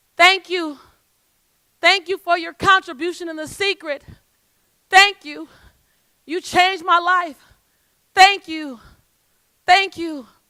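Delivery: loud yelled voices. Retelling people along the off-ramp calling thanks: imitating people yelling out. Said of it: "people yelled out".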